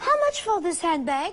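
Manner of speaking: French accent. Speaker shows how they answer people in English, with a French accent. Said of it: "my default English with a French accent English".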